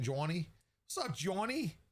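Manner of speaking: fake Boston accent. Trying out how a chat name would sound: put-on Boston accent. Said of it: "Maybe a Boston accent?".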